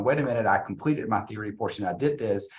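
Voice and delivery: ordinary talk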